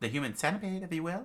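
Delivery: plain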